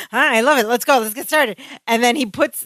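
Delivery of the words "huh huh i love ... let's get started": mock-frantic put-on character voice. Describing a scene where Larry hands his partner a pen, imitating Larry's frantic eagerness. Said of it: "Larry's in this frantic energy".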